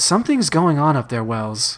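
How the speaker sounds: ordinary delivery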